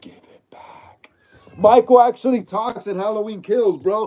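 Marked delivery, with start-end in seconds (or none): 0.0-1.1 subtle, faint, very quiet whisper. Speaker retelling a Halloween Kills scene, quoting Michael's line in Michael's subtle whisper. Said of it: "He whispers".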